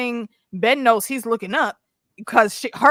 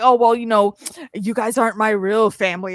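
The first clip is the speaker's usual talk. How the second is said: put-on whiny, tearful crying voice. Mocking Ben, who complains to the others: mocking Ben's whiny crying. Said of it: "he's still sitting here crying like".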